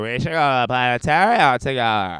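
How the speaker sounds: put-on slurred drunk woman's voice. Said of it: "a very drunk girl".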